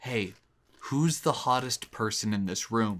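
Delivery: whispering quietly. Showing how the party game works, leaning over to ask: whispering. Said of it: "I'm whispering to you".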